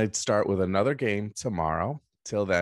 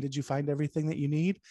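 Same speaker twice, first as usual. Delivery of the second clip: librarian voice, much higher pitch; 7 semitones higher, 3 dB quieter than usual. Showing learners how to act out a scenario with voices: librarian voice. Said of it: "I use the voice of a librarian".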